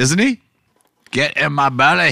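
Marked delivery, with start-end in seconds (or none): 1.1-2.1 put-on typical Scottish accent. Asked for a typical Scottish line, quoting a Scottish character in a Scottish accent. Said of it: "what's a typical Scottish?".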